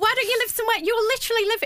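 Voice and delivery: very high, shrill, full-on high-pitched shout. Ranting to the listeners while admitting to it, shouting. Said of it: "Sorry, I'm already shouting".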